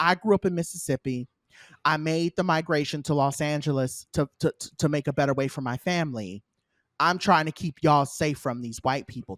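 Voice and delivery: ordinary talk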